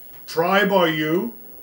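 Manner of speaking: very loud, high, booming creature voice. Questioning the players in a game scene, in a loud booming voice. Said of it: "It's a very loud voice".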